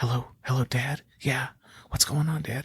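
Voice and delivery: quiet, secretive whispering. Recalling answering the phone to dad while hiding in the bedroom, retelling a whisper. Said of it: "Why are you whispering?".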